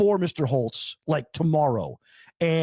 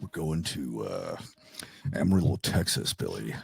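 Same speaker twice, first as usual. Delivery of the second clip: cheesy, far deeper, creaky radio-announcer voice; 6 dB quieter than usual. Recalling taping these calls, the speaker talks in a radio douche voice. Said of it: "I would talk in my radio douche voice".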